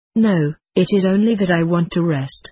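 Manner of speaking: ordinary delivery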